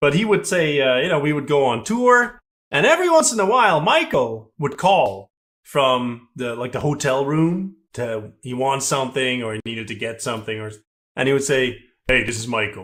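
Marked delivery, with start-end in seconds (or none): 12.1-12.8 deep, low, plain speaking voice. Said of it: "he would just talk in a deep voice".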